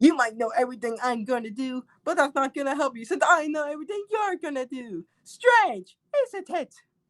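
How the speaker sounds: high, voice-acted cartoon-dub character voice. Showing off a voice practiced with a cousin, doing a Metal Sonic voice. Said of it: "that's my Sonic".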